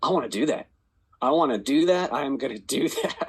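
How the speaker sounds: eager, inspired, insistent tone.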